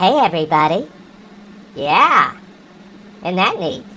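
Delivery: high-pitched voice-changer effect. The speaker shows the audience their new voice changer, in a high-pitched voice. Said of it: "I can change it to a high pitch".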